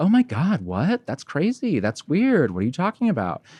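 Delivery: fake shocked surprise, high pitch with swooping tune. Retelling mom's reply to a question about parents, imitating mom's fake surprise. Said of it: "kind of was like".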